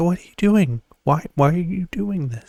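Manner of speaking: hushed stage half-whisper. Retelling a scene the speaker loved: imitating Owen Wilson half-whispering. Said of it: "I just love the way he, like, whispers".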